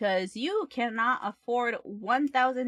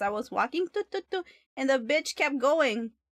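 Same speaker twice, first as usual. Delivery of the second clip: plain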